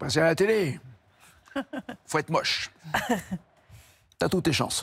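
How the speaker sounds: French Algerian accent, laid on thick and exaggerated. Retelling Bruno's joking reply to the speaker's question, in a forced pied-noir accent. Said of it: "qui forçait son accent pied-noir".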